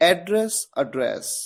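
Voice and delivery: address said slowly with its stress shifted.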